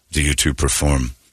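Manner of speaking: creepy put-on low voice. Retelling how a priest questioned a teenage friend: imitating a creepy priest. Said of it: "he said it in such a creepy way".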